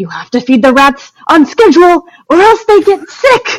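high-pitched, rising yell. Retelling a Law and Order scene, imitating Adam Driver yelling at technicians. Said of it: "he's yelling at these technicians and he goes".

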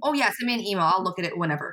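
ordinary talk, nothing marked

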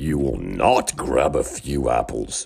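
deep creaking voice. Reading a story aloud, voicing the largest apple tree speaking to the boys: deep, creaky voice. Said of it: "said a deep, creaky voice".

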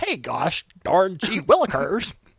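exaggerated wholesome goofy voice, swooping and drawn-out.

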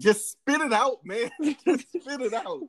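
put-on, exasperated, very high, drawn-out scream. Retelling yelling at the tv while watching the movie: imitating screaming at the tv. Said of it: "screaming at the T V".

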